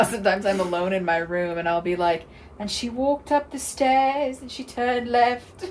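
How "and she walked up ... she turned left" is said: clumsy fake British accent, pitched up, reading voice. Showing how she reads aloud alone in her room, bad put-on british accent. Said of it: "it's not a good British accent".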